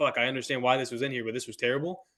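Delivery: ordinary delivery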